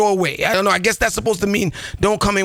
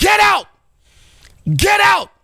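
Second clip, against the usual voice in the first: mock shrill, swooping, loud, high furious shout; 11 semitones higher, 5 dB louder than usual. Recounting a man ordering the speaker to leave; imitating a loud yell. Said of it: "But he said to me loud".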